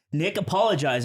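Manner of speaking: ordinary delivery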